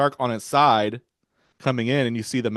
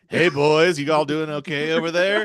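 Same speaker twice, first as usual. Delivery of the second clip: mock creepy man voice, higher; 4 semitones higher than usual. Imitating the man in the boat talking to the kids: imitating a creepy man. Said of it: "Was he not a little bit creepy?".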